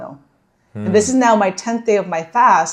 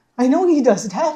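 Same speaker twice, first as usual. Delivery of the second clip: put-on confident, self-assured tone without a shred of doubt; 4 semitones higher than usual. Retelling own past answer in a cafe conversation: imitating saying it confidently. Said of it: "saying it so confidently".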